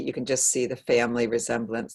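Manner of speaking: ordinary talk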